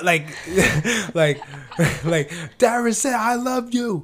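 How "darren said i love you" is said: high, loud yelling, like reading aloud. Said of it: "That's how you gonna be".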